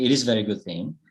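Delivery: ordinary delivery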